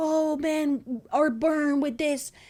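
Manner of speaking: heavy put-on French accent, slow and thick. Retelling what a mother said about her son: imitating a strong French accent. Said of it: "with her very Frenchy accent".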